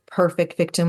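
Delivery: ordinary delivery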